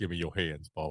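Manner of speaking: low, deep, soft put-on voice. Making a cornbread video and unable to stop the impressions, do a John Coffey from The Green Mile impression. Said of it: "John Coffey from the Green Mile impressions".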